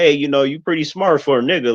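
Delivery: mock pleasant, polite-sounding, nice cordial tone. Imitating a backhanded compliment: imitating a nice tone of voice. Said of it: "even when they use a nice tone of voice".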